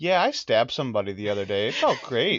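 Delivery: nonchalant, breezy, sing-song, offhand tone. Acting out someone casually admitting a crime: mock nonchalant confession. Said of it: "That's like walking up".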